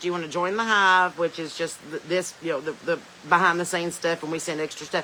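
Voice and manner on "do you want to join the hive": plain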